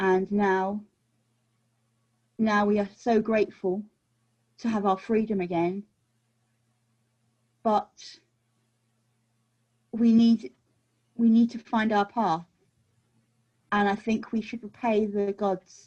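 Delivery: speaking very quietly, hushed. Player character telling a woman their story so the others won't hear, speaking very quietly. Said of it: "so you're telling her very quietly what?".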